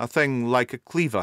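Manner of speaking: ordinary talk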